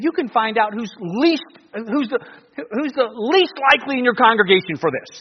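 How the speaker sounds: heavy sarcasm, high pitch, rising tune. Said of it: "he's using some sarcasm here".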